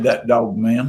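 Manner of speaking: plain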